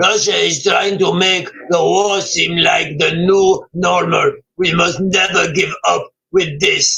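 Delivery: put-on Ukrainian accent. Delivering Zelensky's Twitter statement to the listeners in your best Zelensky voice. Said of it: "That was my best Zelensky voice".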